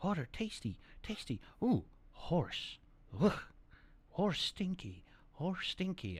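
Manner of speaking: breathy talking-dog voice in broken human words. Voicing a dog drinking water by a horse: voicing a talking dog. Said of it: "and he's like".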